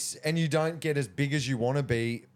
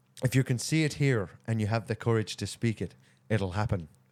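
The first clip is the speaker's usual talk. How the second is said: put-on Irish brogue in a low voice; 4 semitones lower than usual. Asked by the other speaker to say it with the accent, doing a Conor McGregor Irish accent. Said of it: "Say it with the accent".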